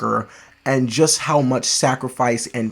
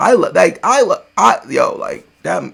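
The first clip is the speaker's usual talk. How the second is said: choked-up, teary voice catching, pitched high; 6 semitones higher, 6 dB louder than usual. Speaker reacts to a movie scene with kids, tearing up. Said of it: "I'm tearing up".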